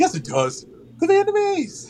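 squeaky, very high-pitched, swooping, insistent voice. Describing a scene, imitating a man saying it again, in a more high-pitched voice. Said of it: "in a more high-pitched voice".

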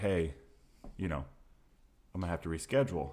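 ordinary talk

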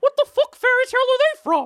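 shrill, swooping, squeaky high loud cartoon voice. Retelling a story scene, the speaker voices Mickey's reaction in a Mickey Mouse voice. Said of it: "that's a really good Mickey voice".

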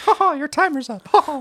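squeaky, high-pitched cartoon character voice. Speaker imagines a voice assistant voiced by a Disney character, in a Disney character voice. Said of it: "pick whatever Disney character you want to voice".

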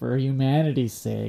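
dripping with heavy sarcasm. Retelling how others said a line before a dive, mock-sarcastic tone. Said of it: "it's like the most sarcastic".

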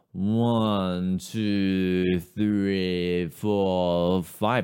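put-on slow, level, drunken slur, words run together. Showing how to count to five while acting drunk: slurred drunk-style counting. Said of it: "slurring the words, acting like you're drunk ... really slowing the articulation like that".

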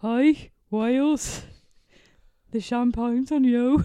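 bad put-on Birmingham accent, loud and slow. Asked by the other speaker to redo a line in a Birmingham accent: bad Brummy accent. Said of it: "A bad Brummy accent is the only accent I can do".

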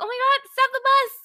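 high-pitched, loud, thrilled, excited shriek. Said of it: "And I was like".

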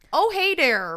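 loud, high-pitched put-on Minnesota accent. Reading a listener's email aloud from a minnesota local: put-on minnesota accent. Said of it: "Did I do that good justice?".

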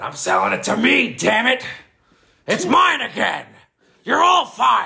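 put-on impression, very high-pitched, raspy, domineering ranting delivery. Joking about who would win a ladder match: Vince McMahon impression. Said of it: "He does a great impression".

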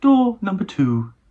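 announcer-style cooking-show host delivery. Picturing different presenters reading the line, the speaker tries India Fisher: India Fisher MasterChef voice. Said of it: "That's not bad, actually".

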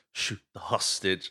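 mock whisper. Recounting a movie hostage scene, quoting an actor's line, retelling a whisper. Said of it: "Jeff Daniels just whispers".

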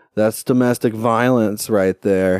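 plain

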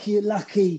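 put-on restrained, held-back taunting in a Scottish accent. Recounting a man screaming at him, imitating a Scottish-accented shout. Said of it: "he's going".

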